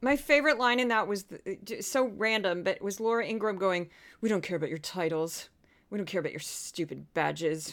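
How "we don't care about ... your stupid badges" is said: put-on low, clenched pundit voice, lower and quieter. Quoting a favorite line from a clip: Laura Ingraham impression, low clenched voice. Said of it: "low way of talking and very clenched voice".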